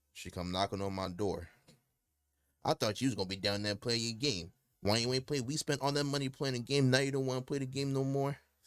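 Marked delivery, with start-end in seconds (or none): 2.6-8.3 put-on nagging New York tough-guy voice, higher pitch. Retelling how mom knocked on the door to complain: imitating mom nagging, New York thug voice. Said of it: "why she sound like a fucking New York thug".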